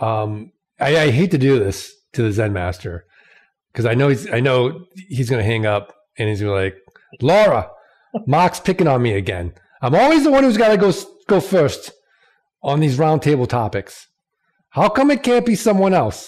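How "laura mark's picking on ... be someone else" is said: put-on Massachusetts accent, higher. Imitating the Zen master complaining about always going first: put-on Massachusetts accent. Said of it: "how is that accent?".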